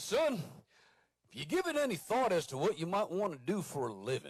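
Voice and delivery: fatherly Southern drawl, swooping up and down. The speaker imitates his Navy father asking him, at twelve, about a living: Foghorn Leghorn-like voice. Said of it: "he does talk like this, a little bit like Foghorn Leghorn".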